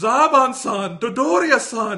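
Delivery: shrill, very high-pitched, very loud screaming yell. Describing a favorite anime scene, imitating Frieza yelling while destroying a planet. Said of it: "and he's yelling".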